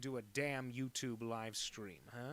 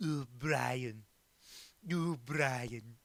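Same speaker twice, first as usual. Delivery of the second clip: loud, badly drawn-out delivery; 6 dB louder than usual. Doing the classic impression typed in the chat: bad Stewie impression. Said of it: "bad Stewie impression".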